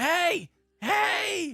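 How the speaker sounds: shrill, very high, loud, drawn-out "hey". Calling out to people sparring by the guild: yelling. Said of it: "Stop yelling".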